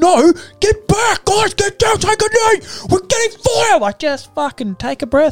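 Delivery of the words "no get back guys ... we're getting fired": put-on screaming, much higher pitch. Talking about paintball, the speaker retells how they screamed orders at the players, mock-screaming. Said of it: "Why are you screaming?".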